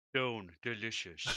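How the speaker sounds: in-character fantasy orc voice. Player voices his character picking up a stone: orc voice. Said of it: "I don't know why he sounds like an orc".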